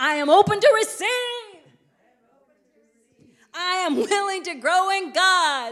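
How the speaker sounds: earnest, heartfelt delivery.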